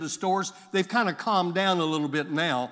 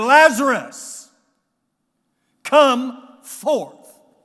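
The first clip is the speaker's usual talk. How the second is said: high, elevated, very loud calling voice; 7 semitones higher, 10 dB louder than usual. Speaker retells a man calling a dead man out of a tomb, retelling a raised-voice call. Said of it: "he said with a elevated voice".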